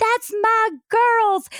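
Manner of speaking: very high-pitched, joyful, proud cheering yell. Describing mom at her daughters' dance routine: retelling mom's cheering yell. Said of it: "she's yelling out and cheering us on".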